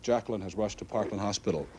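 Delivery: normal talking voice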